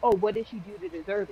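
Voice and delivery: ordinary talk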